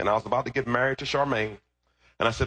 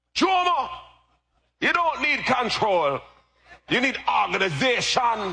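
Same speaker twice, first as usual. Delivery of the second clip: put-on Jamaican accent, much higher; 11 semitones higher than usual. Retelling a talk with their father, the speaker gives the father's answer in a Jamaican accent. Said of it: "Jamaican accent".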